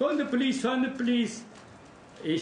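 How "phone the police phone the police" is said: high, raised shouting. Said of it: "shouting at Reva".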